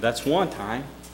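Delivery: put-on muttering under breath. Husband retelling what his wife said on a honeymoon mule ride, imitating muttering under breath. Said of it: "I heard her say under her breath".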